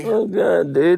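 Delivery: giggly speech repeatedly broken by laughter. Reacting to a joke about the Pope, laughing while talking. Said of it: "I can't believe I'm laughing like this".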